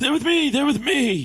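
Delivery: loud, very high shout. Voicing a character pushing into a room past guards: yelling. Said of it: "just yelling".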